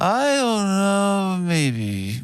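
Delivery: very slow, weak, drawn-out, fading trail-off. Showing speech without authority, trailing off and letting words fall off. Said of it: "It's not trailing off like".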